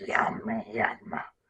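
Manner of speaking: deep, gravelly, spitty gremlin growl. Showing how to voice gremlins, making the sound in a spitty gravelly gremlin voice. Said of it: "almost spitty in there, a little like that".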